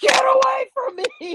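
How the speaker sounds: very high, shrill, loud, authoritative shout. Retelling a self-defense scenario with three guys, retelling an authoritative shout. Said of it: "that authoritative voice. ... dug that up, not from my belly, but from my toenails".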